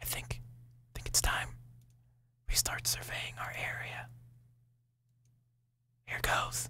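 whispering quietly. Speaker talks to a partner right after saying the coast is clear, whispering. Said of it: "Can I stop whispering now?".

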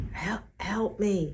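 croaked, croaking voice. A panting, wary man stares at the people around him; croaked. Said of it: "he croaked".

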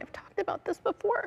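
crying while talking. Talking about something discussed before, crying while talking. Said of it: "I don't know why I'm crying".

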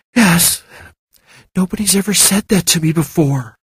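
tearful, deeply moved, high pitch. A woman answers a man who has just reassured her, half-whispered. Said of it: "she whispered".

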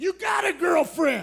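loud shouted yell. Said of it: "you gotta yell it".

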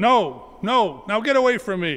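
mock frantic, terrified yell. Asked a second time if he is a follower, the narrator yells out. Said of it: "I yelled out".

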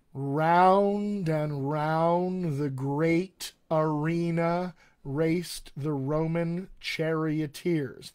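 very slow, deliberate, with "round" drawn out. Guiding listeners through a tongue exercise, repeating the practice sentence: very slow. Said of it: "let's do this again really, really slowly".

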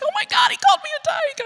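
acted very high, excited, thrilled exclamation. Recounting getting home after a man's remark, acting out own past excitement. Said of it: "I was so excited".

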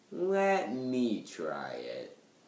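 eerie, creepy, very slow, very drawn-out. Voicing a scene character offering to try a pizza bagel: creepy-sounding delivery. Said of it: "That sounded very creepy".

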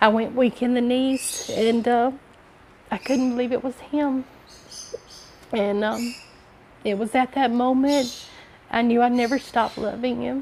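tearful voice on the edge of tears, high and slow. Recalling hearing his voice again after twenty-some years, about to cry. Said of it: "I'm sorry, I'm going to cry".

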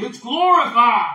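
very loud, booming voice. Picturing a voice from heaven speaking to Jesus: booming voice. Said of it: "hear this booming voice saying".

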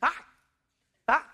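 high, chirpy, annoyingly cheerful, cheesy, overly happy voice. Retelling greeting people walking by with push carts, mock annoyingly happy greeting. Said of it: "like annoyingly happy".

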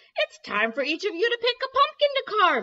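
big, blustery voice, pitched very high and loud. Reading a story, Big Mama calls the girls into the kitchen, in her big, blustery voice. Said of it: "she said in her big, blustery voice".

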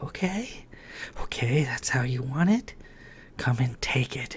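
sultry, breathy, seductive voice. Reading a woman's line to a man in a love scene, sultry voice. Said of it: "she said in a sultry voice".

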